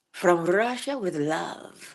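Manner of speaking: corny, cheesy, drawn-out delivery. Greeting a listener with a favorite James Bond movie title: cheesy delivery. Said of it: "So one more time for the road".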